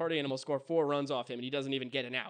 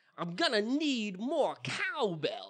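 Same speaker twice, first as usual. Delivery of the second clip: very slow, oddly sing-song, swooping high delivery; 7 semitones higher than usual. Answering the other speaker's talk of Walken impressions: Christopher Walken impression. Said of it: "That's not bad".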